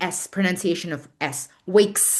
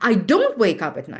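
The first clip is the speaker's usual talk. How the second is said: word "don't" strongly stressed. Teacher asks students which word is stressed: stress on don't. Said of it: "listen to me. Where is the stress? ... don't. Yes, great job".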